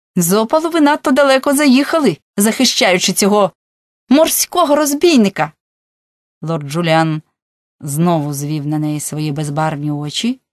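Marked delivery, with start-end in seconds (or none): 0.2-5.6 contempt hardening into open anger, pitched up. Narrator reading a woman's retort to a lord, contempt turning to anger. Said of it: "презирство почало переростати в злість".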